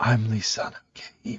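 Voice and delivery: put-on sexy whisper. Mocking how an actor talks on screen: Chalamet sexy whisper. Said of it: "sexy whisper throughout every role he's ever done".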